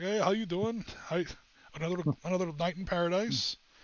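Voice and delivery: put-on heavy Minnesota accent laid on thick. Imitating a man from minnesota who greets them, in a thick midwestern accent. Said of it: "he has like a, you know a thick Midwestern accent".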